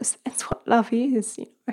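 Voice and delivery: high, tearful, emotional whisper, close to tears.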